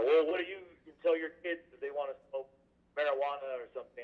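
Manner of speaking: play-acted irritated, confrontational, somewhat angry, challenging tone. Retelling an upset opponent's question at a public hearing: imitating an angry tone. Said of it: "in a bit of an angry tone".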